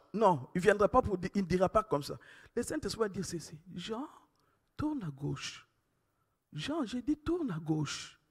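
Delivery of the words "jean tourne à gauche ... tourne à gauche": very quiet, soft, tender, gentle hushed voice. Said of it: "elle est tellement douce".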